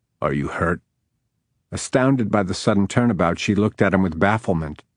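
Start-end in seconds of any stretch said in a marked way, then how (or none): 0.2-0.8 rough, gruff, low voice. Reading a story aloud, voicing a character: gruff voice. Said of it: "In a gruff voice he asked".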